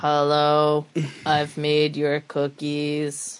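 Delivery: put-on dead level robotic sitcom girl voice, "hello" stretched out. Talking about a sitcom robot, showing how she always talked: Vicky robot voice. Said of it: "She would always talk like this".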